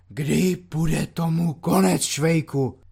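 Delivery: crying out in a hoarse rasp. A lieutenant sits down on a bunk and calls out a question, hoarse exclamation. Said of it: "chraplavým hlasem zvolal".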